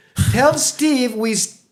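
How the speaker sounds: anxious, shrill, very high, very slow put-on accent. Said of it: "she goes in her accent".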